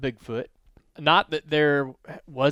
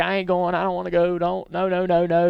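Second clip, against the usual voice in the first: mock crying child voice, higher; 4 semitones higher than usual. Retelling a first-grader refusing to go into class: imitating a crying child. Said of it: "starts crying".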